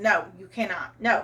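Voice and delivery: ordinary talk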